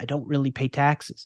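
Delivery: whispering. Speaker explaining their tax strategy, letting the audience in on it, whispered confession. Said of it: "I need to whisper this".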